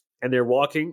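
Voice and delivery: ordinary talk, nothing marked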